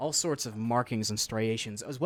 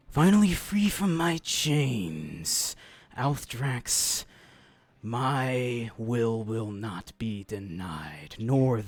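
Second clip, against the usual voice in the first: serpentine snake voice, with my drawn out; 4 dB louder than usual. Narrating a freed serpentine form speaking in Celestial to Althdrax, in a serpentine creature voice. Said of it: "the serpentine form uh, saying".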